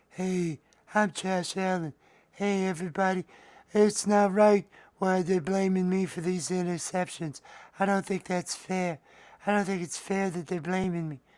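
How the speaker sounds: very high, slow, dragged-out puppet voice. Trying out another voice for a Josh Allen head puppet. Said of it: "It could be something like that".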